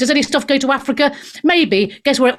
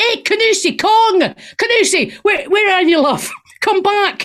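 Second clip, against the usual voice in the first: Scottish accent, pitched higher, called out loudly; 8 semitones higher than usual. Imitating [name] calling out for someone: [name] doing a Scottish accent. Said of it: "Cam doing his Scottish accent".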